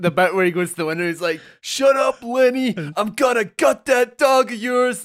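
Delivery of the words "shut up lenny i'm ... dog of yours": hammy shout, high and drawn out. Retelling a film scene at a window: imitating someone shouting. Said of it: "fucking shouting at the window".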